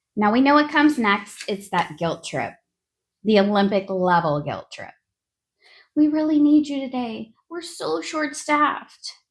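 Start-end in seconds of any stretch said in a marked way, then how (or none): 6.0-9.2 put-on wounded puppy pleading tone, higher pitch. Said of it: "they say it with that wounded puppy tone".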